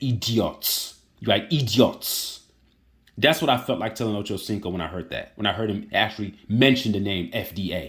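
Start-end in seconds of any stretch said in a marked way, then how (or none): 0.0-2.4 put-on Nigerian-accented speech. Speaker quoting what their dad used to say, in dad's Nigerian accent. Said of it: "in his Nigerian accent".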